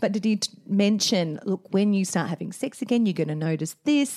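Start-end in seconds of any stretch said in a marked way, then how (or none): 1.4-4.2 gentle, calm, soothing, reassuring doctor voice. Retelling what the obstetrician said about sex after the pill: imitating a calm doctor. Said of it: "I love how we do these doctor voices, that are all very calming".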